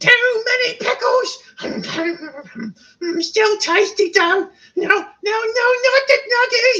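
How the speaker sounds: very high, squeaky, silly snot-creature voice. Voicing a random snot creature for viewers, in a funny snot creature voice. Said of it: "I did it in a funny voice".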